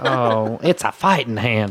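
put-on Southern American drawl. Quoting a character's line from a show: imitating a put-on southern american accent. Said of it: "he goes all Southern".

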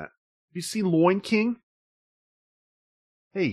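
put-on Boston accent pitched very high. Joking about a review that misspelled the movie title, in a Boston accent. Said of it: "That sounds like the Boston".

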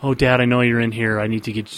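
ordinary talk

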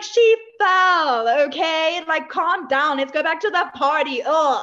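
very slow, careless, unbothered drawl, every word dragged. Retelling how the Baroness dismisses her daughter's fall: imitating the Baroness. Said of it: "even in the Baroness, she's like".

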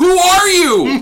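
very high, shrill, loud yell. Recounting a scene where a man yells at an answering machine, retelling a yell. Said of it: "he yells at the fucking answering machine".

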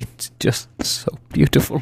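tearful, weeping, sobbing, overcome with emotion. A character sits beside another, moved by the music, sobbing with emotion. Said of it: "pull it together".

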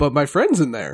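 silly horse voice, low and quick. Voicing a horse that looks over at you and answers, goofy horse voice. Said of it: "he's got a goofy voice".

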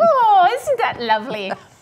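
put-on English accent. Showing how they'd talk around someone from england: put-on english accent. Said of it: "I'd be talking like them".

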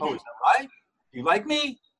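supplicant, insecure rising upturn on right and me. Showing the speech habit a coach teaches people not to use, supplicant rising inflection. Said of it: "That supplicant rising inflection".

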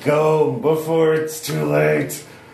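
furious, high, buzzing insect drone voice. Voicing a wasp speaking to another character in a story scene, angry buzzing wasp voice. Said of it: "in an angry buzzing voice".

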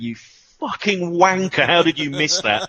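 distant, high-pitched jeering, heckling shout. Retelling shouting from the away end at a missed chance: imitating someone shouting. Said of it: "a distant voice in the back of the away end shouting".

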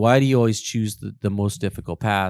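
normal talking voice

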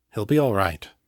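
hushed, gentle, quiet. After feeling the sleeping man's pulse, John speaks to her softly. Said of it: "he said softly".

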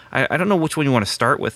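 ordinary delivery

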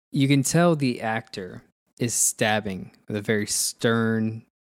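ordinary delivery

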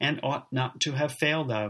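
ordinary delivery

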